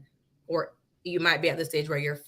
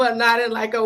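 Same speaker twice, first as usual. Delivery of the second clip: high, loud laughing, cracking up and giggling. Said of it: "I'm sorry, I'm cracking up".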